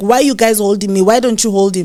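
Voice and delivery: mock-angry, put-on angry voice. Recounting a family fight, the speaker retells their words to those holding them, retelling own angry outburst. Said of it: "I got so so pissed".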